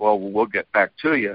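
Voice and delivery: normal talking voice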